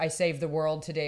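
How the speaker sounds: normal talking voice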